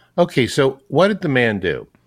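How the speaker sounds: ordinary talk, nothing marked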